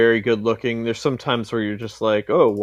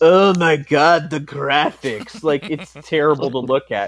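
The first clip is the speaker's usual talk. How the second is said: put-on petulant, whiny, mocking complainer voice; 4 semitones higher, 3 dB louder than usual. Mocking people who complain about a game's graphics: mocking impression of complainers. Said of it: "That voice you did".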